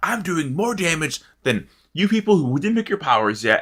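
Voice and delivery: mock yelling. Retelling a fellow player's retort during an argument in a game, retelling a yell. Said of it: "So we're yelling".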